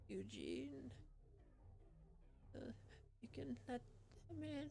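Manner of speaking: quiet, frail voice. Game master voices someone inside after a persuasion roll: quiet, frail voice. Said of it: "a quiet, frail voice from inside go".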